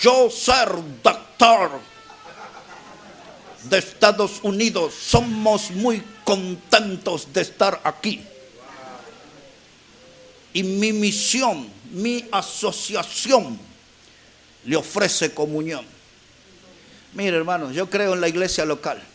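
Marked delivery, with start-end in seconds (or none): 0.0-15.8 slow, chopped-up Spanish with broken grammar. Speaker mimics a visitor from the United States offering his mission, talking like Tarzan. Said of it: "le habla ahí como Tarzán".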